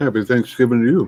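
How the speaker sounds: muffled speech through a full mouth. Returning a viewer's Thanksgiving greeting mid-bite, talking with mouth full. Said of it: "I got a mouthful of uh, pecan pie".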